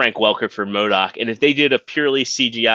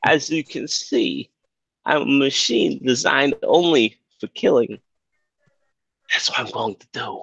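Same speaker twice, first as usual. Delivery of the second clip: put-on halting quirky voice, higher; 3 semitones higher than usual. Imagining how an actor would voice a villain: Christopher Walken impression. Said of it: "how would Walken say it".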